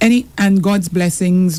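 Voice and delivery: ordinary talk, nothing marked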